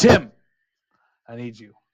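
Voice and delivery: very loud shouting yell. Voicing William calling out to the crew on deck: William yelling to the crew. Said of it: "you hear William just yell out to everybody".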